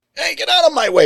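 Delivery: very high cartoon parrot voice. Casting a rude, perverted little creep character: Gilbert Gottfried voice. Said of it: "I would have him voiced by Gilbert Gottfried".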